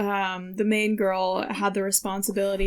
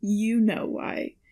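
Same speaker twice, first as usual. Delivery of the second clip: play-acted sour, knowing, pointed and bitter tone. Retelling a movie character's reply to the main girl, imitating Chase bitterly. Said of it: "You make him sound more bitter than he does".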